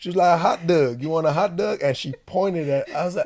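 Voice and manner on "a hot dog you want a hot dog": put-on Baltimore accent. Retelling what the lady at the cafeteria line asked: imitating a Baltimore accent. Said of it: "the Baltimore accent".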